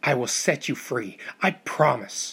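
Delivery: slow, intense, fierce whisper. The narrator speaks into a man's ear, fierce whisper. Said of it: "I whispered fiercely into his ear".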